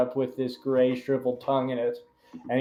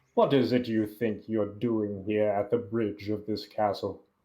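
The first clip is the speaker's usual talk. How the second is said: deep voice, muffled as through a mask; 4 semitones lower, 4 dB quieter than usual. Voicing Leonard greeting the party at a castle bridge: deep voice muffled through a mask. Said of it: "he says through his muffled mask".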